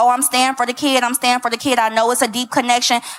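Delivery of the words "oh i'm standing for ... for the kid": ordinary delivery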